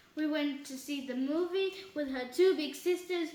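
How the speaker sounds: ordinary delivery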